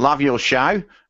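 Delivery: put-on, fake Australian accent. Reading out what he wrote: put-on Australian accent. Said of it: "I'm going to read it in an Australian accent".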